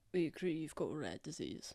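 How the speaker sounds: low, hushed, quiet voice. A character keeps talking to Yezi while walking down the path, speaking quietly. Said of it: "quietly, and he's gonna say".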